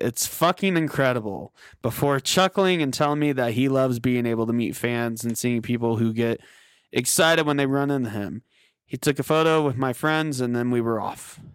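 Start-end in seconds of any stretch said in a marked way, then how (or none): 0.0-1.5 sarcastic delivery. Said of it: "he sarcastically replied".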